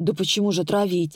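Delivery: plain reading voice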